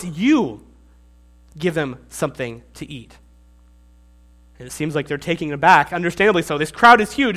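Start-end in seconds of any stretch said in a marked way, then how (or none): 0.0-3.2 you hit hard with heavy stress. Quoting a verse where the Greek is emphatic: strong stress on you. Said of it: "The Greek is emphatic. It's like, no, you. You, bold italics".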